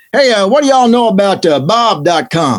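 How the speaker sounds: put-on dopey, dim-witted, dumb-sounding Texas accent. Speaker retells somebody asking a man a question, in a dumb Texan accent. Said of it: "I'm going to do a, a dumb Texan accent".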